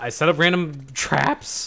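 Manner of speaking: voice cracking. Player setting up random traps in a game, voice cracking. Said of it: "My voice just cracked right there too".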